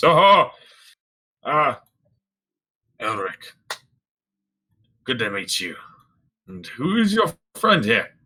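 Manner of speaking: jolly, good-humoured, high, swooping voice. Voicing a man greeting a newcomer and his friend, in a jovial voice. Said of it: "kind of like this jovial voice".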